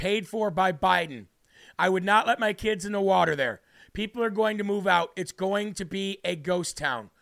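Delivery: plain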